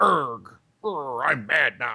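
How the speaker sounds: put-on mad, angry gamer voice. Comparing movie and game prices, mock-angry gamer voice. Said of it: "that's my mad gamer voice".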